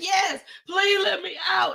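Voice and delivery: play-acted high sobbing through the words, pleading. Retelling being stuck in an elevator, answering the people outside: imitating own boohoo crying. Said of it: "And I'm still boohoo crying".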